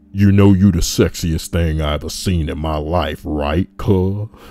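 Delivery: put-on big, loud, deep voice of large man. Reading a story aloud, acting out a large man's recorded message: imitating a man's deep voice. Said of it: "says into the mic in his deep voice".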